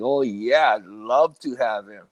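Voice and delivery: play-acted slow, heavy, dripping sarcasm. Retelling playing along with the others: retelling a sarcastic reply. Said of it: "making like that real sarcastic".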